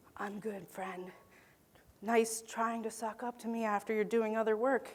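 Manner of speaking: aside whisper. During a talk, whispering to an audience member. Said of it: "[Whispering to audience member.]".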